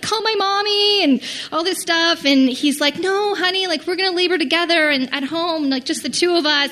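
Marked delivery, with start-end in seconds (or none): 0.0-2.2 play-acted, high, screaming voice. Speaker recalls going into labor at home, retelling her screaming. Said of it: "I'm like screaming".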